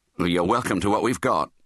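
ordinary delivery, nothing marked

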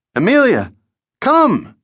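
very high, swooping falsetto shout. Narrator reads a man calling his dog to come, falsetto shout. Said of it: "Jimmy cried in his falsetto".

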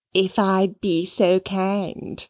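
very slow, taunting, mocking, drawn-out drawl. The maid repeats the visitor's polite words back at her: mocking Cora. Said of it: "mimicked the maid in a mocking tone".

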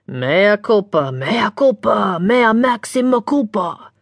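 loud stage whisper. Reading a story, a man scolded by a girl answers in a loud whisper. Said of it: "said in a loud whisper".

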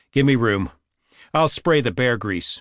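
ordinary delivery

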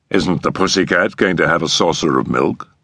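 plain

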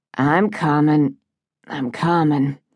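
ordinary delivery

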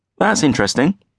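condescending, patronizing voice pitched very high. A young man answers an older man who then calls him 'my boy': patronizing. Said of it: "Don't patronize".

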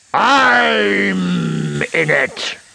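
shrill, creaky, rough high growl with drawn-out "I'm". Narrator reads the bone answering the robbers' question, growling. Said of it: "the bone growled".

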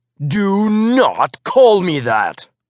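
teeth gritted, "not" dragged out and stretched. Narrator answers a doctor who greets them by an old name: through clenched teeth. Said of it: "I said through clenched teeth".

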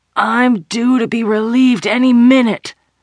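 put-on wheezing. The narrator, knocked to the ground and bleeding, wheezes at her attacker. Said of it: "I wheezed".

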